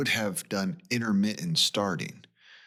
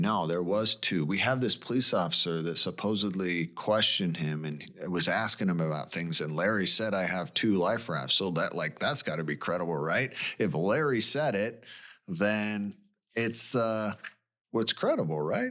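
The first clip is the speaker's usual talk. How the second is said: normal talking voice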